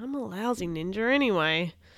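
ordinary delivery, nothing marked

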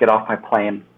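ordinary delivery

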